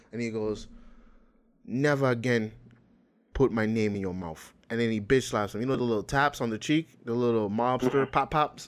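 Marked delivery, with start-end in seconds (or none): 1.6-4.5 put-on Dagestani accent. Retelling what a man said to another man before slapping him, Dagestani accent. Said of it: "I'm going to try to do a Dagestani accent right now".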